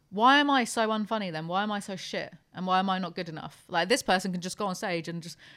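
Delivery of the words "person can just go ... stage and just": ordinary talk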